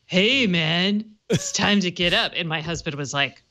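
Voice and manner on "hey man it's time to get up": slow, chill, laid-back surfer dude drawl. Describing an Echo alarm voice they enabled, in the Finding Nemo surfer dude voice. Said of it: "get the surfer dude to wake you up. It's like".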